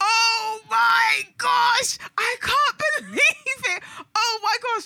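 mock very high, stretched-out, thrilled excited shout. Describing watching season three, out of their seat: retelling excited shouting. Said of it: "I was out of my seat shouting like".

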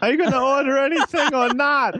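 put-on very high-pitched old lady voice. Recording a character line for ADR; Adam Sandler-style old lady voice. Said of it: "almost an Adam Sandler old lady impression".

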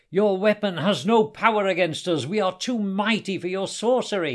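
loud, high-pitched, menacing threatening shout. Narrating a fight, a warrior raising his sword calls out: shouted. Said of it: "he shouted".

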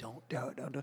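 high, repeated screaming of "don't". Retelling screaming at people while driving: imitating own screaming. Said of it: "I'm screaming at the top of my lungs".

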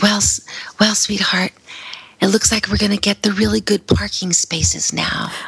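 whispered words. Recalling what she said to him once paralysis reduced her voice, retelling a whisper. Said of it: "I said in a whisper".

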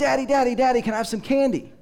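put-on high, pleading little-kid voice. Retelling how a small son begged his father for candy: imitating a small child begging. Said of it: "his son Sammy, who was about four or five".

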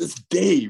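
fed-up, pissed-off, annoyed tone. Retelling the locked-out partner finally answering who it is: imitating Cheech pissed off. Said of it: "he gets pissed off enough, he goes".

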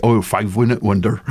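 put-on heavy, broad, thick Dorset accent. Remembering pasting with a paste brush, the speaker quotes him: broad Dorset accent. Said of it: "in a more broad Dorset accent".

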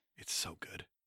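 hushed, soft unvoiced whisper.

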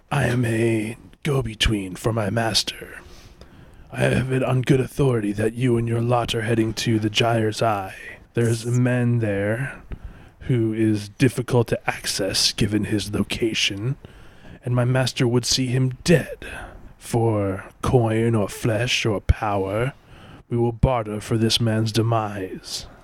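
scary, spooky, frightening voice. Role-playing a master's go-between addressing the party, in a scary shadow voice. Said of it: "I need to go back into the scary shadow voice".

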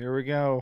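mock frightened, uneasy, scared-sounding voice. Imitating how another speaker sounded in a video: imitating someone sounding scared. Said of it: "you sound so scared before you drove".

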